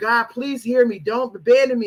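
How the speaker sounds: put-on tearful, crying, begging voice. Retelling how David prayed to God: imitating David crying and begging. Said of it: "crying and begging".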